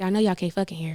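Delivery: low whisper. Retelling a line quoted to a couple at the club: retelling a whisper. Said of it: "that's all I literally whispered".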